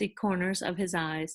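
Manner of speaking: ordinary delivery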